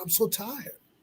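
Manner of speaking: put-on tearful, breaking down in sobs like a baby. Retelling a late-night phone call where they broke down: retelling own crying. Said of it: "I started crying like a baby".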